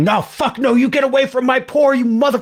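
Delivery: very high, full-throated scream at the top of lungs. Retelling how the site foreman ran over and screamed at the cows, retelling his screaming. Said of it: "He starts screaming".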